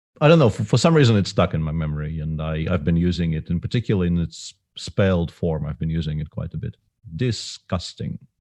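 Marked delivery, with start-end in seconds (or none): 7.2-8.2 failed fake Russian accent, whispered. Speaker tries a remembered word the russian way, bad russian accent. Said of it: "But that doesn't sound Russian at all".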